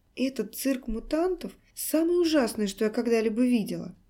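ordinary delivery, nothing marked

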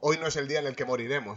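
ordinary talk

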